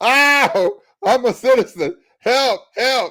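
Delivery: acted, high, drawn-out hollering and screaming. Speaker acts out people being picked up, imitating people hollering, screaming. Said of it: "hollering and screaming".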